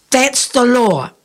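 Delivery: stern, firm tone. Narrator reads Danny speaking to Jamie about his helmet: stern. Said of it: "Danny spoke to him sternly".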